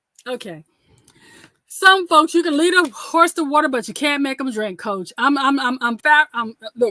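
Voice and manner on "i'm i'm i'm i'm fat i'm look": stuttering, much slower. Speaker addresses the crowd, surprised the event is free; stuttering. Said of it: "I'm stuttering now".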